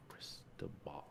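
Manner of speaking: soft whispered voice. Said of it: "Okay, here we go".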